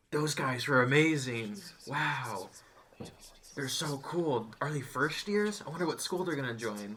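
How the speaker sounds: put-on murmuring whisper. Telling a story, acting out the students in the crowd: imitating murmuring, whispering students. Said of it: "start to murmur and whisper to each other".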